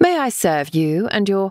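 plain

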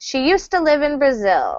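natural connected English, words blended smoothly. English lesson on how fluent speech sounds: fast, words run together. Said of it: "in fluent spoken English, this might sound like".

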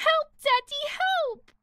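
high, screamed cry. Calling for Daddy while Mummy threatens her: screaming for help. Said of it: "Screaming won't work".

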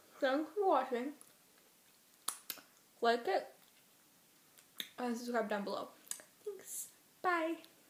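speaking through a full mouth. Ending a video after stuffing Peeps in the mouth, talking with mouth full. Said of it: "Got people in my mouth".

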